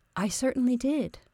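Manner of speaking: prompt, quiet, high voice. A narrator reads Mary answering George's question, prompt and quiet. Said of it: "Mary responded promptly and quietly".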